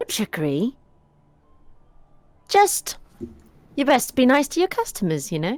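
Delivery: high, disembodied, chiding voice, as if from the ether. An unseen presence answers the bartender in his establishment; a disembodied voice from nowhere. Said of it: "A voice from the ether calls out from nowhere. / madam. / A voice from the ether calls out from nowhere".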